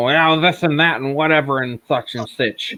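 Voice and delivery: mock drunken speech. Retelling what a friend said on live shows: imitating someone drunk. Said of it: "he was a little snozzled".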